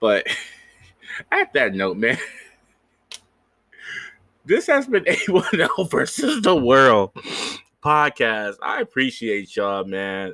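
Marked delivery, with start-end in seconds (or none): 0.0-8.6 talking through bursts of laughter, pitched up. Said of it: "I can't stop laughing".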